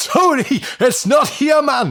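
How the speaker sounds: put-on very high yell in a northeastern English accent. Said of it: "in his trademark northeastern accent".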